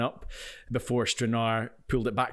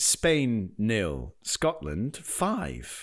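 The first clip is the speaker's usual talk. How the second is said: very slow, swooping sports results reader voice. Co-host reading out football scores for the weekly roundup, classified-results style. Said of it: "Just [name] reading the scores".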